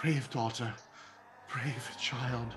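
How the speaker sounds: soft, hushed half-whisper, close and low. Narrating a father holding his trembling daughter, half-whispering. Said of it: "and is whispering".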